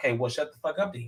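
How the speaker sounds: put-on quiet mutter. Recapping a group argument, quoting what Mia said; Mia's under-breath mutter, retold. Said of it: "Mia says under her breath".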